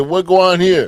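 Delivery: loud, high, forceful, demanding shout. Retelling how police bust in the door: imitating police bursting in. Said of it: "They bust in the door, said".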